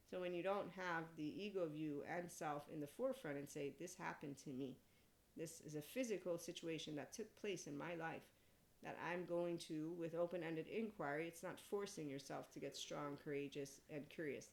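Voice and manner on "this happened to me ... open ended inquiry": plain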